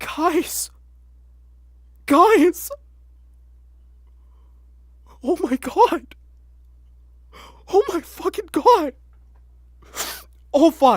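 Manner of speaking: shaky, trembling voice. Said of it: "I'm shaking".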